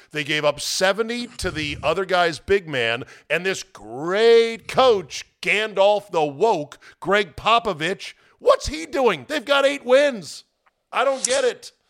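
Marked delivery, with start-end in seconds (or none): 8.4-11.7 open, carried-away shouting, raised and pitched up. Ranting about a basketball team's coach, yelling. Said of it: "I'm yelling".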